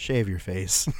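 tone of utter resignation, given up. Retelling what a Marine told him after the First Sergeant stormed off, imitating a resigned voice. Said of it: "just the resignation in his voice".

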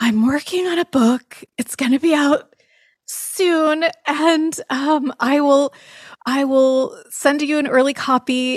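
sighing through the words. Retelling the other speaker's past words about a book: imitating a big sigh. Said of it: "you said with a big sigh".

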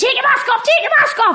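mock very high, shrill, loud shout. Recounting being photographed outside a restaurant, quoting a shout: retelling a shout. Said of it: "I shouted".

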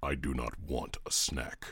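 very low, completely flat, utterly dry deadpan. Retelling Kratos's reply when a snack is offered, Kratos deadpan impression. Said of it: "in his completely deadpan".

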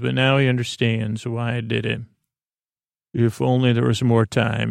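normal talking voice

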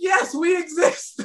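high-pitched, slow, exasperated crying out.

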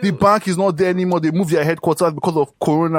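play-acted, irritated, high-pitched, angry shouted yell. Retelling a parking dispute with a grumpy guy: imitating a pissed-off man yelling. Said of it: "He was yelling at me a second ago".

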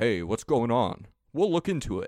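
gruff masculine detective voice. Describing the new game trailer to others, doing a manly Detective Pikachu voice. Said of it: "this manly voice".

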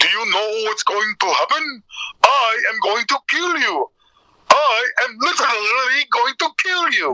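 put-on pitch pushed up high in broken Hungarian accent. Retelling a bit from the award show, in a broken Hungarian Dracula voice. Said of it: "broken Hungarian, broken Dracula".

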